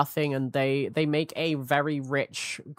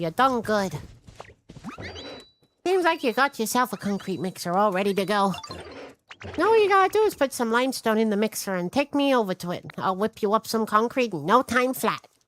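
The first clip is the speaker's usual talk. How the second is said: cute put-on voice, pitched higher; 7 semitones higher than usual. Reading a game character's lines aloud: scrungly cute voice. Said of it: "you have such a scrungly cute voice".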